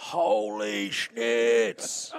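mock creaky little yelled outburst. Apologising for an earlier outburst, imitating his own yell. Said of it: "you heard a gentleman yell".

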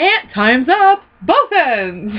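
put-on loudspeaker announcement voice. Quoting the announcer's fun fact at the end: imitating the prison announcer. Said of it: "he's got the fun fact at the end".

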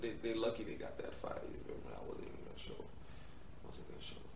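soft whisper under the breath.

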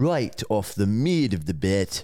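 put-on South African accent, sports commentator style. Put on the spot to do an accent for Matt: South African accent. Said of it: "he's going to give you a um, South African accent".

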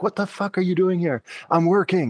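high-pitched, unhinged, yelling and screaming outburst. Recounting a woman screaming at them in front of her coworkers, imitating her screaming. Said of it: "It was like just screaming at me".

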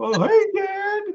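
put-on very high puppet-like little kid voice. Mocking a puppet nephew someone voices on his show, in a little kid voice. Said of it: "He sounds like a little".

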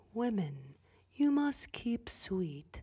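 slow, creepy put-on man's drawl. Imitating what he would say to the girls, imitating a creepy man's voice. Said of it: "he has this creepy freaking voice ... I'm trying to do his voice".

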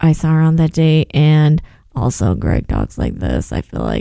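put-on depressed voice. Retelling what a contestant said, imitating someone sounding depressed. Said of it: "he just sounds so depressed".

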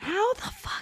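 hushed whisper, muttered under the breath. Reacting with a curse while chatting with others, whispering a curse. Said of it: "We keep whispering every time".

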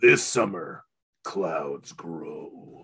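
deep, very low movie-trailer narration voice. Joking that a title sounds like a movie trailer: Don LaFontaine trailer voice. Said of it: "Don DeLaFontaine".

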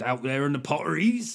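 put-on West Country accent. Showing how the Potteries is something you want to say, in a put-on West Country accent. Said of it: "something you want to say in a West Country accent".

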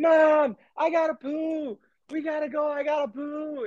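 put-on play-acted very high, slow little-girl scream. Speaker retells a young girl calling to her mom, imitating a girl screaming. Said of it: "she starts screaming".

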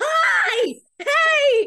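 shrieking, very high, loud scream. Retelling greeting someone in line at Chrismacon: imitating own screaming. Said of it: "was screaming, going".

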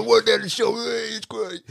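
very high, rasping, creaky put-on character voice. Showing how stories slip into a friend's voice: imitating Pete's voice. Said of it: "do Pete".

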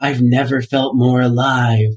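slow, eerie, creepy drawn-out delivery. Retelling a scene where Hama speaks in the woods: imitating a creepy tone. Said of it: "the creepiest tone ever".

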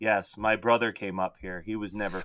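put-on emotionless drone, very low and flat. Mocking a low-budget horror movie's exposition scene with a flat monotone delivery. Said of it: "it is the most monotone".

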